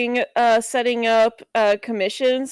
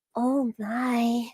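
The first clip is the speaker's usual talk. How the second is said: soft, hushed, breathed-out cartoon pony character voice; 7 dB quieter than usual. Showing how they answered sussy remarks: Fluttershy voice. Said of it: "I would just go into my Fluttershy voice".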